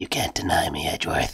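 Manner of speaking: creepy, eerie whisper. Whispering creepily into another player's ear as a joke: creepy whisper. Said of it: "trying to creepily whisper into my ear".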